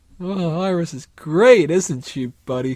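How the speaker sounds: exaggerated lovestruck gushing, loud, high, slow, drawn out. Imitating Eddie in an over-the-top scene: over-the-top grinning Eddie. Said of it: "really over the top, bug-eyed and smiling from brim to brim".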